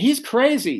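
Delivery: mock screaming. Retelling how a sister started screaming at the family: imitating sister screaming.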